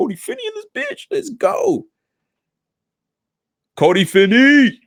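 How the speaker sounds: very high, hyped shouting with wide pitch swings.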